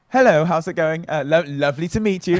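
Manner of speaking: strong, thick, exaggerated put-on British accent. Showing how they greet girls in America, in a strong put-on British accent. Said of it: "put on this like really strong British accent".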